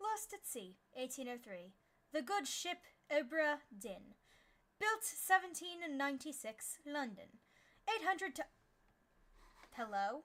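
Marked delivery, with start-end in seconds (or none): 0.0-7.3 put-on British accent, read aloud. Reading the game's opening text aloud in a put-on British accent. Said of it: "I should do it in British".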